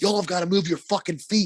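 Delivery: angry, high-pitched yell. Retelling a roller hockey game, yelling at teammates: imitating someone yelling. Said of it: "yelling at these guys".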